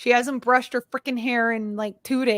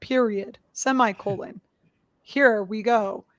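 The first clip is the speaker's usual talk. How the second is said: slow, dead flat, droning text-to-speech machine voice. Describing a program that reads cases aloud, imitating its monotone text-to-speech voice. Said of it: "it's like that very monotone".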